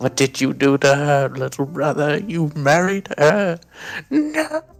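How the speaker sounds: anguished, despairing cry, loud and high. Acting out a character on his knees: anguished cry like Planet of the Apes ending. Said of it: "on his knees, like, Planet of the Apes at the end".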